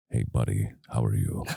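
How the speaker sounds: voice dropping way down into very deep, rough bass. Describing how Ólafur Darri Ólafsson talks, doing his deep bass voice. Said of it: "like the bass of it smacking you".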